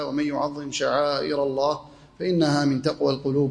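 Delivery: ordinary delivery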